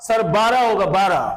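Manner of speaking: play-acted bold, self-assured, confident tone. Teacher acting out a student's wrong answer: acting a confident student answer. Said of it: "confidence ऊपर है।".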